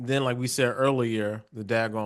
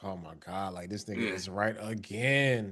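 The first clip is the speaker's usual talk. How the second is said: mock reluctant tone, quieter; 3 semitones lower, 6 dB quieter than usual. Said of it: "reluctant Devin's like".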